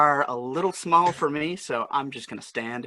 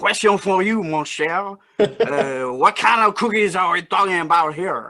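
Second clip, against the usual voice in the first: raised, put-on Cajun accent; 4 semitones higher, 5 dB louder than usual. Told to pick up where he left off, but now in a Cajun accent. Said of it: "you're going to have to do this with a Cajun accent".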